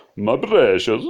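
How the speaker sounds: incredibly bad, clumsy fake Ukrainian accent. Commenting on a game for their channel, the speaker tries an incredibly bad Ukrainian accent. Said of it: "that was an incredibly bad Ukrainian accent".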